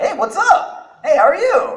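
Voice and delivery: bright, very high, peppy goofy voice. Showing how the character usually sounds: peppy, high-pitched character voice. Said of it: "So he's like".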